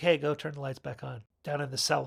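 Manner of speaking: ordinary talk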